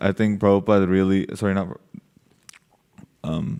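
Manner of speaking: ordinary delivery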